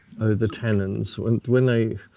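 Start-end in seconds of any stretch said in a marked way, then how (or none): none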